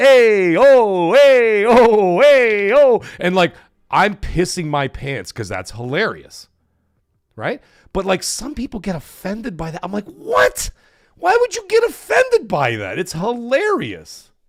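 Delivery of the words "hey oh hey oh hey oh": put-on, loud, very slow, stretched Italian accent. Retelling a clip of a man at the eye doctor, imitating an Italian guy's accent. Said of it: "a clip of like an Italian guy".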